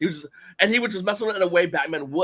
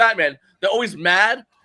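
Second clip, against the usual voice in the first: usual speaking voice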